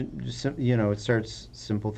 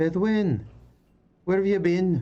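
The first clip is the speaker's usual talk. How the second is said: put-on shrill, high, loud old woman's calling out; 10 semitones higher, 5 dB louder than usual. Narrator describing a scene voices a woman calling out to Bedwin: old dwarven woman calling out. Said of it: "you hear an old dwarven woman um, sort of call out".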